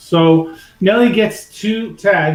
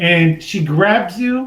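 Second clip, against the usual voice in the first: ordinary talk, nothing marked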